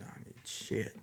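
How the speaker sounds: hushed, disbelieving whisper under the breath.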